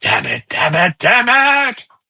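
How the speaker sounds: strained, forced cursing, swooping up high in pitch. The narrator voices Vogel cursing over open comms during the chase: Vogel, strained cursing. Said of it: "you hear the strain in his voice".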